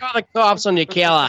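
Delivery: put-on Boston-sounding accent. Riffing on a movie's restaurant scene, in a boston accent. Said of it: "That was more Boston".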